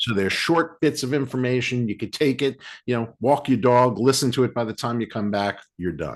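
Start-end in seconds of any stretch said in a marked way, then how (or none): 3.2-4.0 brief New York accent slipping into the phrase. Describing listening to a short podcast on a walk: New York accent. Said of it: "I apologize for that New York accent".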